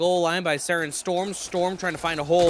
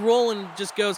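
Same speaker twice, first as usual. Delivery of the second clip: plain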